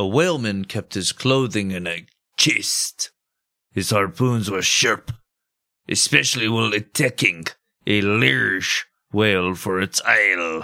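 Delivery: sailor accent from Nantucket. Speaker explaining how Nantucket sailors talked, doing a Nantucket sailor accent. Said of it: "their own strange accent".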